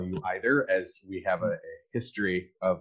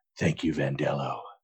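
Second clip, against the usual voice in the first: hushed, soft half-whisper; 6 semitones lower, 6 dB quieter than usual. Parodying a speech, looking down at the crowd: half-whisper. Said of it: "I'll look down and whisper".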